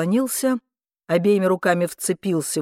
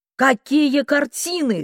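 high, loud shout in disbelief; 7 semitones higher than usual. A woman answers her nephew's demand about the paintings, shouting. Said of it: "крикнула она".

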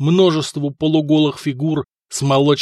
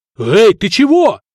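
high, frightened, scared shout; 8 semitones higher, 7 dB louder than usual. A neighbor to a wheezing warrior who cannot speak: yelled in fright. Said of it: "в испуге заорал сосед".

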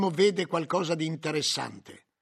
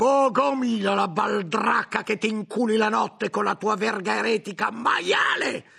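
high-pitched yelling; 5 semitones higher, 4 dB louder than usual. The head cook answers a furious friar's insults, shouted. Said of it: "gridò il cuciniere".

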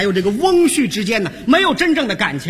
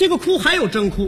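plain

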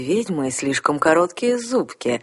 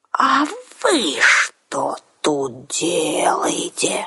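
menacing, rumbling voice. The narrator, a witch, confronts the twins at the door in a scary rumbling voice. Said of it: "страшным голосом пророкотала я".

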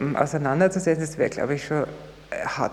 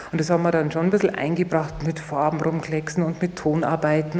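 ordinary talk

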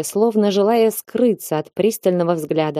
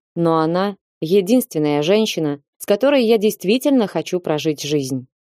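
usual speaking voice

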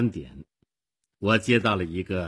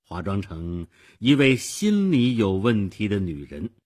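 usual speaking voice

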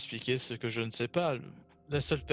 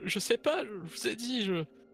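fearful, frightened stammer, higher pitch; 10 semitones higher than usual. A narrator voices a man threatened with death if he won't talk, stammering in fear. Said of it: "commencer à bégayer".

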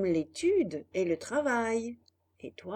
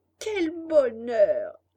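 loud joyful cry, jumping-for-joy exuberance; 5 dB louder than usual. Told she will be his mother, he jumps for joy: crying out with joy. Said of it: "Cria Pinocchio en sautant de joie".

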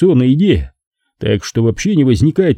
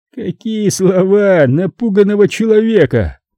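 slow, scornful snort, pitched up; 8 semitones higher than usual. The man with the pistol answers the narrator: contemptuous snort. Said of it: "презрительно фыркнул он".

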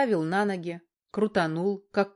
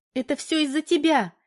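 shouting in desperation; 7 semitones higher, 4 dB louder than usual. Valka, having fallen at the edge of the clearing, shouts: desperate shout. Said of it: "отчаянно закричала Валька".

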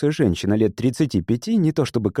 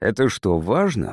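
ordinary delivery

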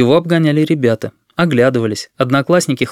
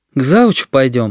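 usual speaking voice

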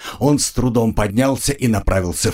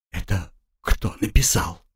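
shaky, trembling, quavering voice; 4 dB quieter than usual. Narrator reading a woman's question about who wrote the note, in a trembling voice. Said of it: "спросила она дрожащим голосом".

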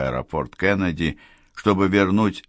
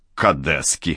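contemptuous, scornful, disdainful snort; 3 semitones lower than usual. Balzac reacts to her plan to leave him with a contemptuous snort. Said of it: "презрительно фыркнул он".

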